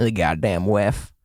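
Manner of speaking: put-on Appalachian accent through the words. Imitating right-wing family members on the WEF, in an Appalachian accent. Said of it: "I gave them an Appalachian accent".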